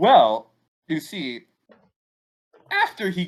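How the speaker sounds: breaking, cracking voice. Starting to tell a listener about a news story, voice cracking. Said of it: "why is my voice cracking?".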